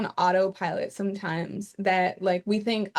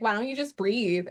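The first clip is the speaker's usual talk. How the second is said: put-on sassy, snarky tone. Retelling a remark someone made to them, imitating a sassy tone. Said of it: "got some sass to it".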